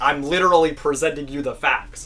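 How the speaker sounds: plain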